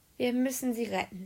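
usual speaking voice

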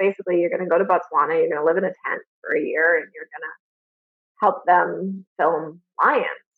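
usual speaking voice

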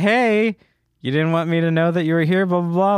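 freaked-out, upset, accusing outburst. Retelling a movie scene where she finds her boyfriend: imitating Mila Kunis freaking out. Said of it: "kinda freaking out".

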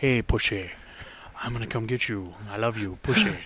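very bad put-on Scottish movie-star accent. Chatting about the old James Bond feel, put on a terrible Sean Connery voice. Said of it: "the worst Sean Connery voice I've ever heard".

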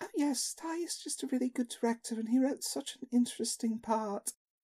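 put-on bright, cheery British accent, light and soft. Quoting how the woman sounds in her interviews, in a chirpy British accent. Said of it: "this chirpy British accent saying".

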